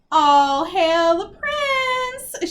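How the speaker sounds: very loud, very slow, high, booming cackle. Sophie leers back at Tedros in front of the villain army, cackling. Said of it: "she cackled".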